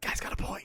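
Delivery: hushed voice. Voicing a whisper that answers a player's shout: whispering. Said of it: "The whisper's like".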